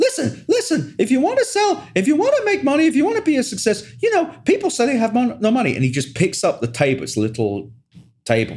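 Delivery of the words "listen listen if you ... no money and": mock very high, insistent, hectoring yelling. Describing a video of Gary Vee in a bar with four guys, imitating Gary Vee yelling. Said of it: "he is just yelling at these four guys going".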